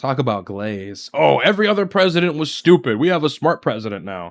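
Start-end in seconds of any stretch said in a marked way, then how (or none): 1.1-4.3 derisive, gushing, brown-nosing politician voice. Mocking the vice president's words about presidents: mocking imitation of the vice president. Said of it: "do you hear yourself?".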